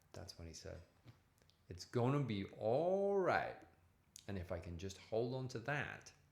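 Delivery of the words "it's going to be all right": imitated Alabama accent. Retelling what a rehab manager said: imitating an alabama accent. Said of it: "That's an Alabama accent".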